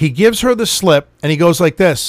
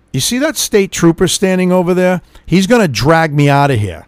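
ordinary delivery

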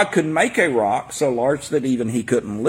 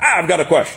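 imitated very harsh tone. Retelling a very large guy at work questioning him at lunch, in a mimicked harsh tone. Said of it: "In a very harsh tone".

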